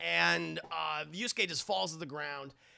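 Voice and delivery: ordinary talk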